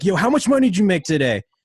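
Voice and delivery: high, loud shouted call-out. Retelling a guy in line yelling at random people, imitating a guy yelling. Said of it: "he's just like yelling at everyone".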